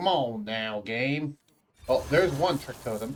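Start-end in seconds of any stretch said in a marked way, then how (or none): 0.0-1.4 put-on, loosely vague Western accent. Complaining about drawing the wrong cards: vaguely Western accent. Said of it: "What was that accent?".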